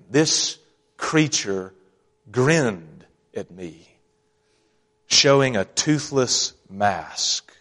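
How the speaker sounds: mock contemptuous tone. Quoting a man describing an old woman who grinned at him: retelling a quote with disdain. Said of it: "you can hear the disdain".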